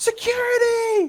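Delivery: very high screamed yell. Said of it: "she screams. She yells".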